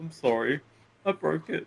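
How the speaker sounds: choked-up, high and slow, fighting back tears. Voicing a character apologizing after breaking something: acting out holding back tears. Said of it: "trying not to tear up".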